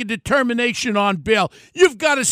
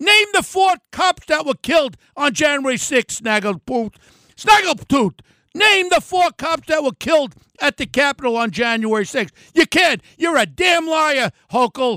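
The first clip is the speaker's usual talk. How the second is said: heated, relentless, angry ranting tirade; 3 semitones higher than usual. Speaking about a rival drawing close in the polls, loud ranting. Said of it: "I'm sorry for being so loud today".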